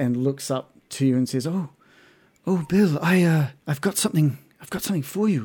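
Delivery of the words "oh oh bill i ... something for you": startled, taken by surprise, higher pitch. Voicing a sister who is greeted and looks up: startled. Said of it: "she's startled by your voice".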